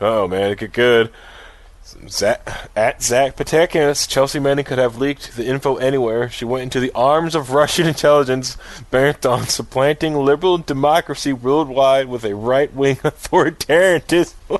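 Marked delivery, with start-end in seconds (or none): 4.1-14.6 cracking up, reading aloud through laughter. Reading aloud a post by a former campaign official, laughing while reading. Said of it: "Sorry, I'm laughing".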